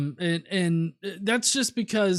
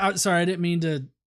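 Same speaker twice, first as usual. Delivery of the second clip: ordinary talk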